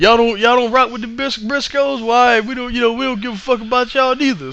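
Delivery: put-on country accent, pitched a touch high. Retelling a wrestler's funny promo after the match: imitating Jay's country accent. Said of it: "Jay in that country accent".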